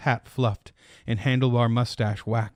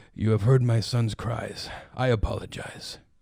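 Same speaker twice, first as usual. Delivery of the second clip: quiet, soft, hushed, gentle tone. The chef replies to a woman who has just spoken to him, in a quiet voice. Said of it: "he said in a quiet voice".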